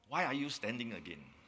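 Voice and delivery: put-on low, concerned tone. Speaker retells what some residents asked during walkabouts, retelling a low, concerned question. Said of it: "in a low tone and a concerning voice".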